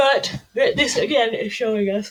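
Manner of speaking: words stretched while yawning. Presenting a chart to listeners, then apologizing; yawning while speaking. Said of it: "Sorry about all the yawning".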